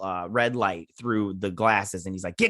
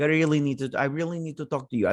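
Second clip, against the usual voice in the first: put-on Russian accent; 3 semitones higher than usual. Retelling how Jack showed up wanting to talk, the speaker does Jack in a Russian accent. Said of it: "That's a Russian accent".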